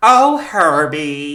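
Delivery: Midwestern accent, loud. Act out what she said to Herbie for the other speaker, as a Sarah Palin impression. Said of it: "oh I'll do it like a Sarah Palin".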